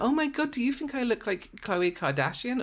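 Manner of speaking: very high-pitched, giggling, gushing voice, acted out. Retelling a woman flirting with male models: imitating giggling. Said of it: "she's like giggling and going".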